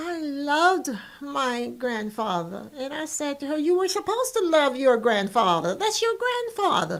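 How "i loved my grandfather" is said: mock little voice, slow, small and trembling. Retelling what a hesitant woman said to the speaker: imitating a small trembling voice. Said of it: "with her little voice trembling".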